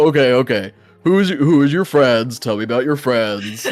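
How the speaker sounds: put-on orc character voice. Voicing the orc Grund asking about the friends: Grund the orc voice. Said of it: "he's like".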